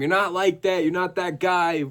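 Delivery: acted heated yelling, high pitch. Retelling a fighter's argument with water bottles thrown: imitating Kevin Holland yelling. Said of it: "yelling at him".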